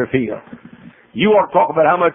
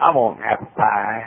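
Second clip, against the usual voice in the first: put-on Southern drawl, lower pitch; 5 semitones lower, 3 dB quieter than usual. Retelling a wife ordering pie: imitating a Southern accent. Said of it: "You make that sound so good".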